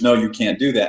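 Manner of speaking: normal talking voice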